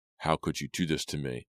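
ordinary delivery, nothing marked

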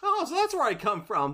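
squeaky, very high-pitched, small little voice. Recapping an episode scene, quoting Flambo in a Flambo voice. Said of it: "Flambo's like".

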